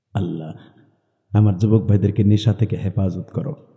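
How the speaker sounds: hushed, soft voice.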